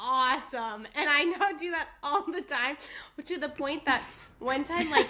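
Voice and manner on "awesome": "awesome" said sarcastically, put-on. Retelling how a friend reacts when something horrible happens: imitating a friend saying awesome sarcastically. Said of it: "she goes".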